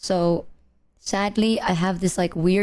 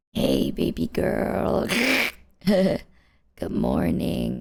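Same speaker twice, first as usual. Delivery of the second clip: hoarse, nearly gone voice, exaggerated for effect. Greeting viewers on a video with a gone voice, leaning into a lost voice. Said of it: "Maybe I should just lean into this".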